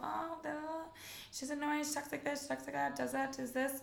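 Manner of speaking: high, fed-up griping voice. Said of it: "and they go".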